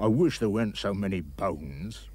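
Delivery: grumpy tones. A giant complains to himself about the bones in his meal. Grumpy tones. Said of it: "and this in grumpy tones".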